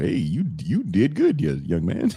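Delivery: animated, encouraging put-on voice, sing-song, pitch swinging widely. Imagining what Doug Williams would say: imitating Doug Williams. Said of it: "All I could think is Doug Williams go".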